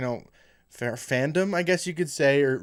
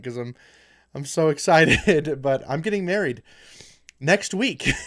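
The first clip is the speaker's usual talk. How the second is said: slow, smiling, grinning delivery; 4 dB louder than usual. Announcing to viewers a wedding next week, smiling while talking. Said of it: "I just can't think about it without smiling".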